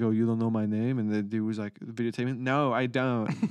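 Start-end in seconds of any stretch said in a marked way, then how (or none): 0.0-1.0 put-on Russian accent. Retelling a video of a released prisoner taunting someone, in a russian accent. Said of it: "He's like Russian accent".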